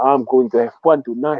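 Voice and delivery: ordinary talk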